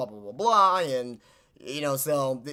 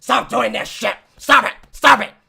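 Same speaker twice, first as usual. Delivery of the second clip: mock wrestling promoter voice, higher and louder; 8 semitones higher, 12 dB louder than usual. Imagining how Vince would react to the gimmick: imitating Vince McMahon. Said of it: "Vince would be like".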